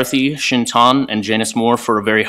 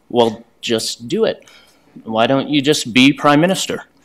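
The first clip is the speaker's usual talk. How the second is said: put-on typical teenage way of speaking. Retelling what a teenage daughter said in the car, imitating a teenager's tone. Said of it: "in the way that perhaps only a teenager can say".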